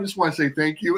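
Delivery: put-on overly polite voice. Retelling greeting the Panda Express workers: retelling being very nice. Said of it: "And I'm, like, so nice".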